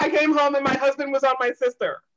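high, blurted straight out, unfiltered. Retelling what a woman said when she phoned in: retelling a blurted-out line. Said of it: "she just literally blurted that out".

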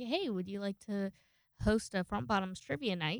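ordinary delivery

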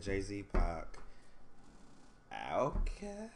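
very slow, doubtful, unsure delivery. Listing favourite rappers when asked, worried about being judged, unsure. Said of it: "Why are you sound unsure on that?".

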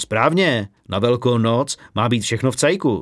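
ordinary delivery, nothing marked

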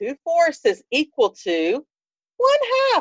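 put-on childlike pupil's sing-song kid voice. Showing the voice used for answers in an online math show, kid voice. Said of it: "I also have my kid voice".

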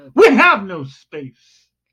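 sudden, swooping, loud, high shouted outburst. Delivering the punchline to a partner's joke about never joining MySpace, yelling. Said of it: "Why are you yelling?".

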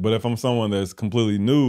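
ordinary talk, nothing marked

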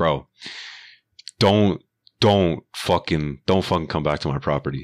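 put-on aggressive, hostile ranting. Retelling how a man told off a truck driver: imitating an aggressive telling-off. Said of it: "fucking dicko mode on this guy".

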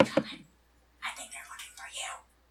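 loud scream-whisper. In a role-play, one character warns another: scream whisper. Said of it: "In a scream whisper and says".

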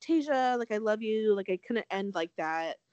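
normal talking voice

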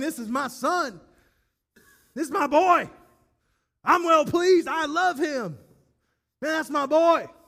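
acted, loud, high, thundering booming bellow. Retelling the moment Jesus is pulled back up, voicing God bellowing. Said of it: "God is bellowing".

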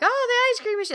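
acted-out thrilled shriek, very high-pitched. Retelling how a character reacts after his nightmare: imitating an excited scream. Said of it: "he screams out".

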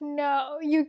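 plain

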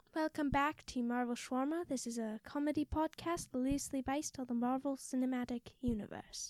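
put-on British accent. Opening a comedy podcast with a put-on British accent. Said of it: "I thought we weren't doing voices this week".

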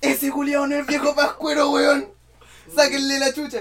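very high-pitched, loud yelling shout. Recalling spotting hair under a wig as a child, retelling a childhood shout. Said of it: "grité así".

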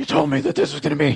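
put-on gravelly hero voice. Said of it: "I'm doing Batman voice for Alan again".

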